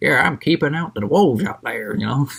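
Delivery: puffed-up, boastful, proud country farmer voice. Summarizing a story about a farmer who boasts, in a boastful Giles farmer impression. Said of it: "There's my farmer impression".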